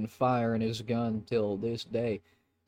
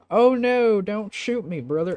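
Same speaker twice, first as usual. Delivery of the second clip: very high, loud, hokey put-on rural country accent; 10 semitones higher, 7 dB louder than usual. Voicing the next one that takes the fallen one's place, in a redneck voice.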